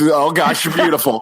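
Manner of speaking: mock flabbergasted, awestruck gushing amazement. Recalling meeting Kate beside Prince William, reenacting being flabbergasted. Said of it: "the flabbergasted".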